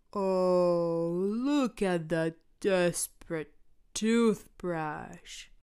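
slow, menacing villain voice, drawn-out oh. Narrating a story about Choopy, speaking the lines of a scary voice. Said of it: "says the scary voice".

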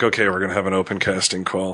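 ordinary delivery

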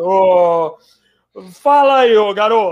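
very slow radio-host drawl, long stretched "ô". Imagining an interview on Pânico, imitating Emílio: Emílio Surita impression. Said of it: "eu tô tentando imitar ele".

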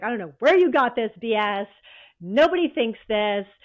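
loud, furious, angry yelling. Quoting a marketing director who yelled at them over the phone, retelling a yell. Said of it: "he is yelling at me on the phone".

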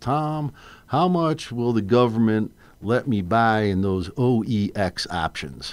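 put-on Texan accent. Retelling a phone call from a client: imitating a Texan client. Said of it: "I'll do it in my best imitation".

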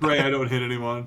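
normal talking voice

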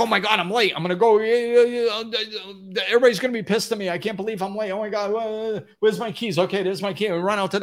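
frantic, flustered, high, rushed, panicked words. Showing the panicked way of doing something when late: panicked, rushed energy. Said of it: "That's one energy".

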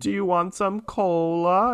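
put-on very high, drawn-out, slow old-lady voice. Describing a woman in a costume, imitating an old lady. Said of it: "you see like this old lady and she's like".

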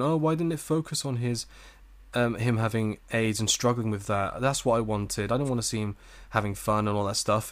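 ordinary talk

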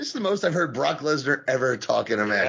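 ordinary talk

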